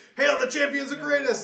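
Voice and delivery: very loud, very high, ragged shouted cheer. Narrating townspeople as the heroes exit the town, crowd shouting. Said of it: "people are, are shouting like".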